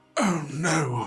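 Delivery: high, panicked cry of sudden dismay. Describing her character tearing a magic card, the speaker voices her panicking. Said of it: "she's like panicking".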